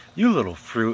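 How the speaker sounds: snarled, menacing snarl. Reading a story, a man snarls at the narrator, snarling. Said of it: "he snarled".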